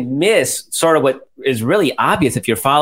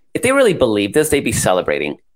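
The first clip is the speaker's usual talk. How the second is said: ordinary delivery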